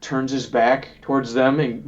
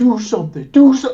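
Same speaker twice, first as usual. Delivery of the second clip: mock furious screaming, very high and loud; 11 semitones higher, 6 dB louder than usual. Describing a man pressing someone, acting out his yelling: imitating a man screaming. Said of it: "he started to like scream like he was like".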